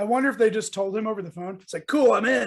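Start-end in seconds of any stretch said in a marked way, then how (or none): 1.9-2.5 put-on, raised, loud cartoon character voice. Imagining his reply over the phone, done in Donatello voice. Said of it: "in his Donatello voice".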